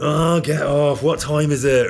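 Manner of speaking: put-on very drunk, slow, loud mumbling voice. Imagining what someone says in a bathhouse when really drunk, imitating a drunk person. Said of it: "when we get really drunk".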